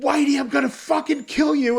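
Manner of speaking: high-pitched mock screaming.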